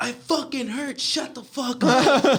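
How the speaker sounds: very high, drawn-out, pained yell. Retelling yelling at the coach after a knee injury, imitating own yell. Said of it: "And I yelled at him".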